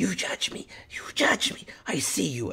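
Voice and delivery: hissing, breathy stage whisper. Game narrator voices a limping creature confronting a player character, hissing. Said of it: "She hisses at you".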